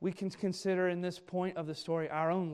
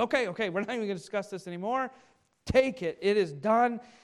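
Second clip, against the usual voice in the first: loud, high, rushed eagerness. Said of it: "he jumps right on top of this".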